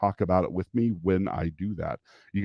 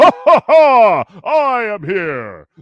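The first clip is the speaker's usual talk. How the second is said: booming, very high, belted-out heroic laugh; 13 semitones higher, 12 dB louder than usual. Walking in on the kids, a parent does an All Might voice. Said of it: "trying to do the voice for All Might".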